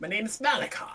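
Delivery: put-on weird elderly man voice. Voicing a character who tells the players his name: weird old man voice. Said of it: "he sounds like a, a weird old man".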